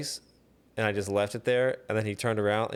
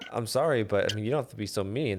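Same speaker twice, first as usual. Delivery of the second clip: mock-polite, exaggeratedly super nice put-on tone. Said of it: "super nice about it".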